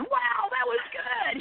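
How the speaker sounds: slow, high-pitched fake gushing.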